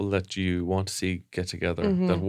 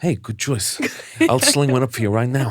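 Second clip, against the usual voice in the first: Irish speaker's bad, fake put-on American accent; 4 semitones higher, 4 dB louder than usual. Retelling a bar visit, voicing the Irish lad serving drinks: imitating Ethan's bad American accent. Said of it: "Irish lad doing a bad American accent".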